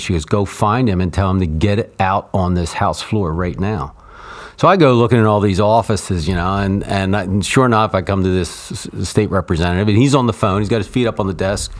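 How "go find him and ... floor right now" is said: normal talking voice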